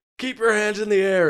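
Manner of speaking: frantic shout, very loud, high, shrill, panicked. Retelling a movie scene where a police officer points his gun: imitating a freaking-out police officer. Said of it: "the police officer is freaking out".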